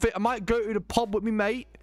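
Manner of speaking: fake put-on British accent. Playing around with British slang words: put-on British accent. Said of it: "Squitty redeemed a British accent".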